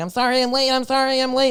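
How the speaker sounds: very high, frantic scream. Describing a prank video, speaker acts out a guy running into a lecture; imitating a guy screaming. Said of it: "he just runs in and he's screaming".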